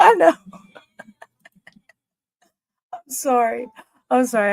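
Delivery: words broken up by giggling laughter. Apologizing while unable to stop giggling: laughing while talking. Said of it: "I got the giggles tonight".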